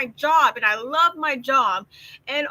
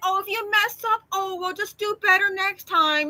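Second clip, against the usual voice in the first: acted sweet, gently indulgent, forgiving tone; 5 semitones higher than usual. Imitating how others speak to a man who makes a counting mistake: imitating bosses being nice. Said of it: "they're so nice".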